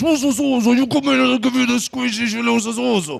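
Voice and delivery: high, creaky special voice. Showing how they talk to their dog Mildred: own dog-talking voice. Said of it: "my dog voice is".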